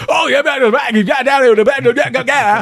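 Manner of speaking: very high-pitched, terrible fake Australian accent. Retelling a movie scene: imitating terrible australian accent. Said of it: "the world's worst Australian accent".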